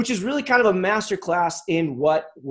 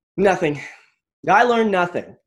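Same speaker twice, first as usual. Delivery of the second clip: mock deadpan, bone-dry delivery, no reaction; 4 dB louder than usual. Speaker retells a camper boy's answer to his question: imitating a deadpan reply. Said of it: "he looked at me deadpan and just goes".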